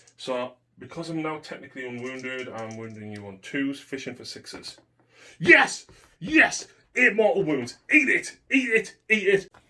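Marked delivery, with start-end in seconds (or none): 5.4-9.5 very high, loud, triumphant victory shout. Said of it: "that shouting in my ear".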